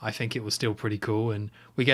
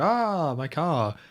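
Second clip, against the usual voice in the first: obviously fake put-on French accent, pitched up; 5 semitones higher than usual. Retelling a film scene, quoting the taxi driver: imitating a fake French accent. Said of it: "such a fake French voice".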